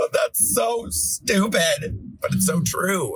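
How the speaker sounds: tearful, drawn-out, very high, slow crying voice. Retelling own reaction to a therapist's words: retelling own crying. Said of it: "crying, like, to the moon".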